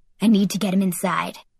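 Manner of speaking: plain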